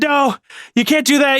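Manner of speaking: screamed out at full voice. Telling a friend about a game partner's reaction when you walked away, retell his protest as a scream. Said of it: "and he's like screaming it".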